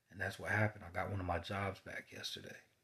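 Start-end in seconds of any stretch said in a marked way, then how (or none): none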